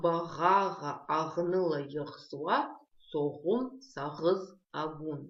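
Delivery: slow, careful reading, syllable by syllable.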